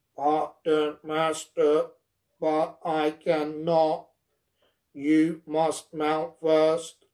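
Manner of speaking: slow, level, rumbling robot voice. A narrator reads a robot's reply to its master, rumbling robot voice. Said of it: "The monster's head bent slowly".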